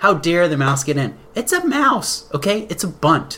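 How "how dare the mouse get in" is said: usual speaking voice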